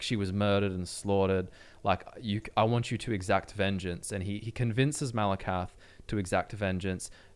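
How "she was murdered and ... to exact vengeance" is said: ordinary delivery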